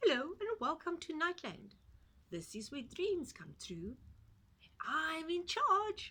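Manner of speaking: tiny squeaky little-man voice, very high and loud. Narrator reading a strange little man's first words, in a very squeaky voice. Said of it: "he spoke in a very squeaky voice".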